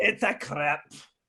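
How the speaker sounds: put-on Scottish-sounding accent. Naming a food as a crepe, in a Scottish-sounding accent. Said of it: "and then you're Scottish all of a sudden".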